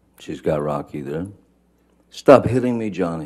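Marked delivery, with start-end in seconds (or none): 2.1-3.3 upset, frightened, high-pitched, freaked-out scream. Retelling a woman screaming during a fight: imitating a freaked-out high-pitched scream. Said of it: "she's screaming in, in her best, um, freaked out, upset voice, high-pitched".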